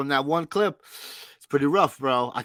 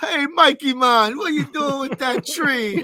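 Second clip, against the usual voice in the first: cartoon-style put-on Jamaican accent, pitched up; 11 semitones higher, 4 dB louder than usual. Retelling a line from a Christmas special clip: imitating a Jamaican accent. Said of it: "a Jamaican accent".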